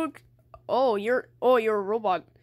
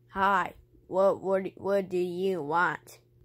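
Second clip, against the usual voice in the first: robotic voice, lower pitch; 3 semitones lower than usual. Kirby answers someone calling his name, in a robot voice. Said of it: "you sound like a robot!".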